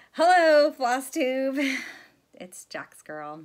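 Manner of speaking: very loud, giggling, laughing through the words. Greeting viewers at the start of a video, laughing while talking. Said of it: "I don't know why I'm laughing".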